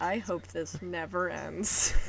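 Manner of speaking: mock very hushed voice, full of longing. Retelling a New Year's moment, quoting a man watching, imitating a wistful voice. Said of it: "he says in the most wistful voice ever".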